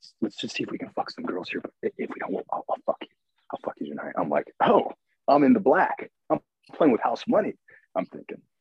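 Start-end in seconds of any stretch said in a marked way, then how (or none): 0.2-4.1 hushed, breathy whisper under the breath. Retelling what a woman kept saying at a club, imitating someone whispering. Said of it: "she keeps on whispering like".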